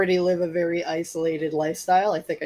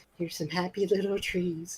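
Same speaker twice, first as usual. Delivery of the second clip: crazy man voice, much quieter; 10 dB quieter than usual. Reading an audiobook as a madman who thinks he is Bob Ross: crazy man playing Bob Ross. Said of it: "I was a crazy dude thinking he was".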